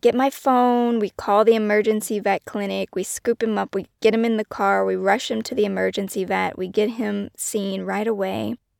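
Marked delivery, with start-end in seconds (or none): 0.0-1.0 mock frantic, loud, terrified, panicked yell. Retelling yelling to Kim after the dog's fall, retelling own yell. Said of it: "And so I'm yelling at Kim".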